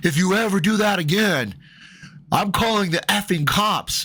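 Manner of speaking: acted mad, threatening voice. Retelling what a man told him after the incident; retelling an angry man's threat. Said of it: "he's real mad through his glasses".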